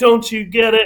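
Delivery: mock furious rant. Retelling a scene where Sarah goes off on a doctor: imitating Sarah's furious tirade. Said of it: "She's cussing him out".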